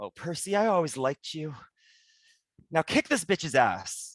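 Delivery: amiable, friendly, familiar tone. Voicing a friend who speaks out of the chaos: friendly voice. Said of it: "a friendly voice".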